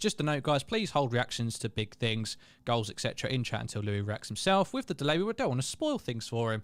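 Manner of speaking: ordinary talk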